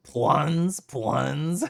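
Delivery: put-on northeastern US accent. Trying out how to pronounce a word: northeastern accent. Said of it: "say it with a northeastern accent".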